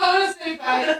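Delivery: high-pitched mock voice, mocking.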